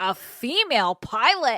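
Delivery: mock playful, teasing, loud, jokey incredulity. Retelling a joke made to a group about a pilot, joking mock disbelief. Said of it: "like how we joke around".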